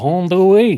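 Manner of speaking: put-on Cajun accent, high-pitched and loud. Imitating Channing Tatum's Gambit from the movie: Gambit Cajun accent. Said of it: "with the Cajun accent".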